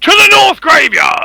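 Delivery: very high, hoarse, rough shout. In a tabletop game, a character jogs out of the building, shouting. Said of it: "I will shout as I".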